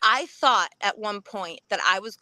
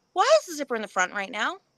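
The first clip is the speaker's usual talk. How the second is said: ordinary talk, nothing marked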